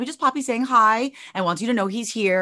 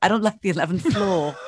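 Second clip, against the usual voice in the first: slight put-on British accent; 2 semitones lower than usual. Retelling Keegan's answer to the speaker's question: imitating Keegan's British accent. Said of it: "He has like a little British accent".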